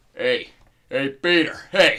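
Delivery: very loud, slow, big bellowing character voice. Doing a Joe Swanson impression for friends: Joe Swanson voice. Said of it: "you got your Joe Swanson impression".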